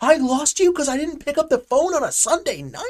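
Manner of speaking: very high, shrill, angry, furious screaming. Retelling a loan officer screaming at his client, retelling a scream. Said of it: "he screams at the client".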